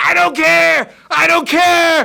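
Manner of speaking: very high, raw, shrill, drawn-out hysterical shrieking. Speaker retells a woman screaming at night as neighbors come out, imitating someone screaming. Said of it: "stop screaming".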